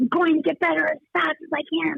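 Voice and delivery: mock emphatic shouting. Retelling a near-death vision, holding a hand: imitating someone shouting. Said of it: "I started shouting at the top of my lungs".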